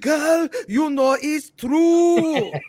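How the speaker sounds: put-on very loud, very slow, high, thick German accent. Recalling guys at a press conference, the speaker quotes one in a thick german accent. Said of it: "Their accents was thick".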